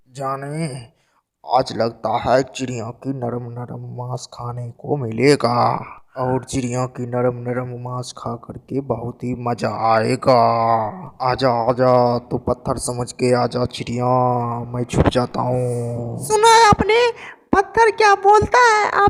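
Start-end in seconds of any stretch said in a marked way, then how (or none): 0.2-16.2 low, hushed, greedy, drooling crocodile villain voice. Storyteller voicing the crocodile, who hopes to eat the bird: hungry crocodile voice. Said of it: "ये सुन करके मगरमच्छ के मुंह में वहां पर पानी आ जाता है और".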